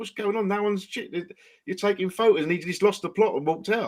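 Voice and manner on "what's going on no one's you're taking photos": put-on bloke voice, high-pitched shouting. At a Chelsea Tottenham game, a bloke tries to get the crowd going; retelling a bloke shouting. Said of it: "he was just shouting at everybody like".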